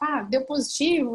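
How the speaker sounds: ordinary talk, nothing marked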